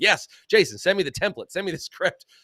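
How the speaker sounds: loud, put-on, sarcastic tone. Acting out a quoted line to show the sarcasm: put-on sarcastic tone. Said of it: "I still want my sarcasm come across as like".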